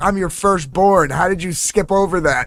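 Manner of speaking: teasing, sarcastic put-on voice. Retelling how they mocked their mom for forgetting names: imitating own mocking retort. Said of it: "even mock her even more".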